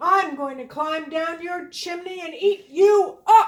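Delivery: very loud, furious, angry wolf voice. Reading the little pig story aloud, the narrator voices the wolf: angry wolf voice. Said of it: "that wolf was very angry indeed".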